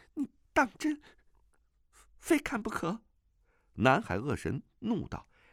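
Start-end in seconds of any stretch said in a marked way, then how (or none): 0.2-3.0 very high, quavering, trembling, pleading voice. Narrator reads a character ordered to reveal her face, trembling voice. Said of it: "穆婉清颤声道".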